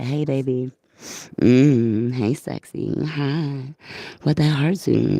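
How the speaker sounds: very slow, lingering, drawn-out stage whisper. Telling listeners to clean up their hearts, then half-whispering. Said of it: "If I gotta whisper it".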